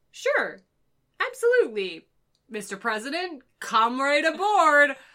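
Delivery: very loud, booming, hugely amused delivery. Retelling how Kirk welcomes Lincoln aboard: Kirk voice, greatly amused. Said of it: "As if this is just the funniest thing".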